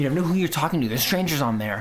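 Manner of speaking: anxious, worried, protective parent tone. Recalling early attitudes to social media, speaker impersonates a worried parent. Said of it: "my impersonation of the, that persona".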